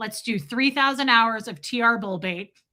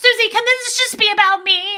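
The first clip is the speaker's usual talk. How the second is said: mock, shrill, very high, very loud flipped-out outburst; 12 semitones higher, 8 dB louder than usual. Retelling how Marilyn reacted to Susie: imitating Marilyn flipping out. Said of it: "Marilyn flipped the fuck out on her".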